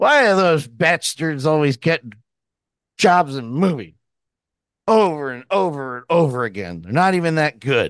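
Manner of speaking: griping tone dripping with mock sarcasm. Mocking a complaint by turning it on other actors; sarcastic. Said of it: "That's sarcasm".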